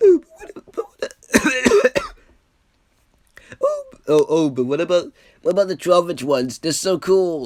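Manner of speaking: very high-pitched, loud put-on voice. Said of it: "I can't do my high-pitched voice".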